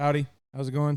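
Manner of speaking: put-on, friendly tone. Describing how they usually greet random strangers on walks, retelling a friendly greeting. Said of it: "I usually walk around and I go".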